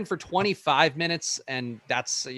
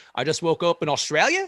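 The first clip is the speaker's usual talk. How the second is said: question-like upward rise at the end of Australia; 2 semitones higher, 3 dB louder than usual. Showing how they go up at the end, rise on Australia like a question. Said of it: "they go up at the end like it's a question".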